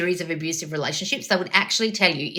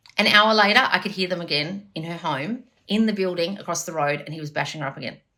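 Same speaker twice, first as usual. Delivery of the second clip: ordinary delivery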